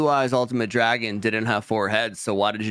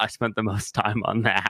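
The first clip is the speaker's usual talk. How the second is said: mock muttering under breath. Retelling a movie scene, quoting a character: imitating muttering under breath. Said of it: "he goes under his breath".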